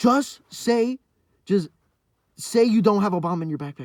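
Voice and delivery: loud, shrill yelling. Retelling how the principal yelled at them, imitating the principal yelling. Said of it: "so he's just yelling at me in his room".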